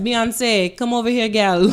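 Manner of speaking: put-on heaviest possible Jamaican accent, loud and calling. Retelling how people called out to someone in Jamaica, strong Jamaican accent. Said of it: "calling her like in the strongest Jamaican accents".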